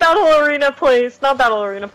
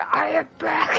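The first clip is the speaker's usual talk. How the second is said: put-on demon voice; 4 semitones higher, 6 dB quieter than usual. Showing how a spooky return greeting would sound: demon voice. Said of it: "if you just hear a demon voice".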